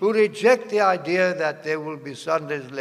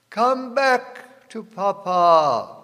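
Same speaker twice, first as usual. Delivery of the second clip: acted, sugary, honeyed sweet inviting voice; 4 semitones higher than usual. Warning about a very nice Pope, imitating his sweet, sweet voice. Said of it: "he's saying in a sweet, sweet voice".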